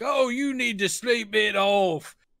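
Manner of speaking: put-on British bobby voice. Recapping a film, a podcaster voices a disbelieving cop on the phone: stereotypical british cop voice. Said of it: "Stereotypical British cop who doesn't believe him".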